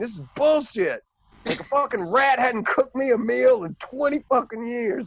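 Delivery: very high, shrill, loud acted-out ranting yell. Act out a dude watching Ratatouille to escape the cold who suddenly yells at the screen, imitating someone yelling. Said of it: "he just yells at the screen".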